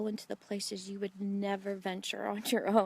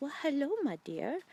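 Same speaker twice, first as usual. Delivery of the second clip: put-on German accent with the pitch raised; 5 semitones higher than usual. Retelling meeting a woman behind a curtain, imitating Hattie's European accent. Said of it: "this beautiful European accent".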